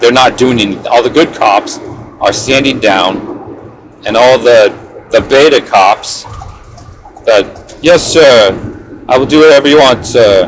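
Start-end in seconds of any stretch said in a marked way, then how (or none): 7.8-10.5 bad, terrible put-on British accent. Voicing police officers answering sir, in a terrible put-on British accent. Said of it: "that's a terrible um, British accent".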